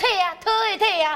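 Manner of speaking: put-on Mandarin spoken with Taiwanese accent. Retelling a father telling his son what he is trying to type, in Taiwanese-accented Mandarin. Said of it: "台湾的国语".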